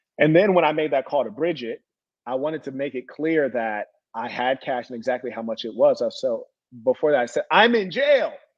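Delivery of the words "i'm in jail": put-on voice, raised and pitched up. Retelling own words on a phone call: retelling own raised voice. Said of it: "let me stop raising my voice".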